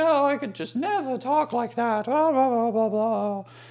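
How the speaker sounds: very high-pitched, refined, posh English lady voice. Retelling a woman's reply to a man from Australia, in a very posh lady voice. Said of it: "very posh lady".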